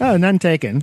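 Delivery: mock sassy tone. Retelling the answer to someone's 'no offense': retelling a reply with attitude. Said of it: "with attitude".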